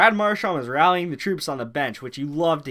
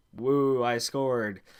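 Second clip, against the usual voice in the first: mock deadpan, flat and unexcited; 3 semitones lower, 4 dB quieter than usual. Retelling a goal celebration with no smile: imitating Grizzlick's deadpan celebration. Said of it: "no smile, nothing".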